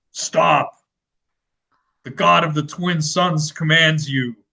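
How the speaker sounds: grand, commanding, godlike proclaiming delivery. Hidden at the top of the tower so they can't see you, yell in a deep voice. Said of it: "yell in a deep voice".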